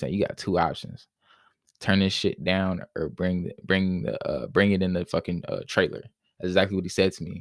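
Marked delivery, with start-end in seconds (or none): none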